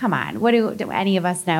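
ordinary delivery

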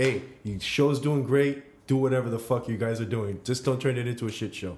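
ordinary talk

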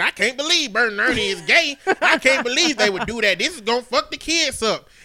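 disapproving, griping, complaining tone. Retelling what Tamara said at the dinner table: imitating Tamara. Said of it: "She say".

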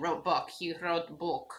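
soft, laid-on, put-on Russian accent. Echoing the other speaker's article-dropping phrasing, in a mock russian accent. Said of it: "Sounds Russian".

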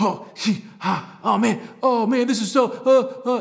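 put-on childlike high, loud frustrated whining noises.

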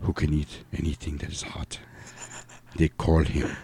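seductive Spanish accent, barely above a whisper. The speaker demonstrates for the other person, in a sexy spanish voice. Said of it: "my sexy Spanish voice".

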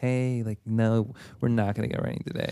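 put-on soft, camp voice.

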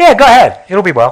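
loud, mock, openly sarcastic tone. Retelling a prophet's reply to the king: imitating a sarcastic reply. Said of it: "he was being sarcastic".

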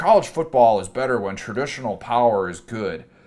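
put-on, snooty, stuck-up Arkansas accent. Mocking a college football take he hates, in a put-on Arkansas accent. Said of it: "What was that Arkansas accent?".

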